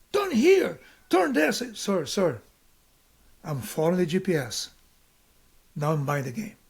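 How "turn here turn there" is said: play-acted very high, harsh, barked yelling. Complaining about a man yelling directions at you, imitating him yelling. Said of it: "because he's yelling at me".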